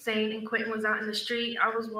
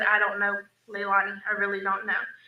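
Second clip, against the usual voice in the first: usual speaking voice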